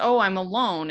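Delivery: ordinary talk, nothing marked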